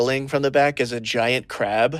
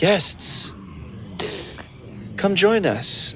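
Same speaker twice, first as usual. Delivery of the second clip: very soft-spoken, slow, gentle call; 4 semitones higher, 4 dB quieter than usual. Describing what the guests hear, the speaker voices someone in the next room: really soft voice. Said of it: "a really soft voice".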